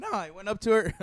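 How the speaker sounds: voice cracking. Telling others how they went up to a girl, voice cracking. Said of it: "Sorry for the voice crack".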